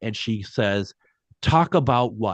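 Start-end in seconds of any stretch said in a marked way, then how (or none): 1.4-2.3 fed-up, exasperated woman's voice. Retelling a woman's voice through a spirit box: imitating an exasperated woman.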